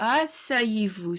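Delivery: asseyez-vous sliding downward, calming. Telling learners to make the sound go downwards: falling pitch through asseyez-vous. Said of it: "make the sound go downwards as well".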